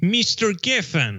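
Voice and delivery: put-on Russian accent. Retelling how his landlady, looking down at him, addressed him: Olga's Russian accent. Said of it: "That's the best Russian accent I can give you".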